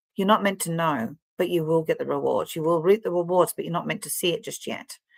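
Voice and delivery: plain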